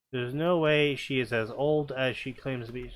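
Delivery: ordinary delivery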